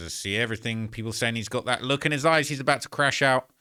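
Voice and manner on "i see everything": normal talking voice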